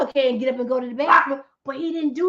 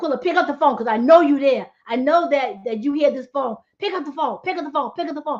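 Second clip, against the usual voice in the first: ordinary delivery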